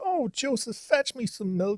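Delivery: high, whiny, swooping sing-song whinge. Retelling how the audiobook reader voices Linton: imitating a whiny Linton. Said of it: "he's talking like".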